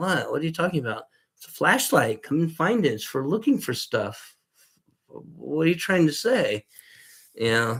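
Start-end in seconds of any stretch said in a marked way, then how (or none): 0.0-6.6 sing-song, sarcastic, faux-naive feigned innocence. Showing how to answer anyone asking about the flashlight: sarcastic feigned innocence. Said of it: "I could be even really more sarcastic and go".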